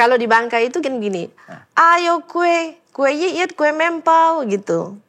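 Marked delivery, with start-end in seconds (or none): 1.7-4.9 very slow, loud, stretched street-hawker shout. Showing how sellers in Bangka call out their cakes: retelling a loud vendor shout. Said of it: "teriak kencang".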